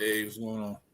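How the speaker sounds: dry, flat, very low voice. Greeting the others on joining the talk: dry, flat greeting. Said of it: "That was dry as hell".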